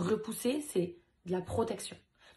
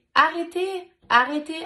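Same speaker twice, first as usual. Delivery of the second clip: put-on small little girl's very loud, high cry; 9 semitones higher, 11 dB louder than usual. Retelling how the speaker's daughter screamed at seeing her father attacked; imitating a little girl's shout. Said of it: "avec sa petite voix".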